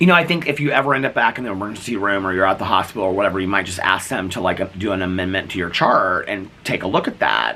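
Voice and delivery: plain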